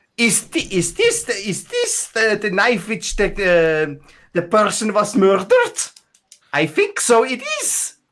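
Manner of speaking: very high-pitched, demented squirrel squeak. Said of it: "why do you sound like a demented squirrel?".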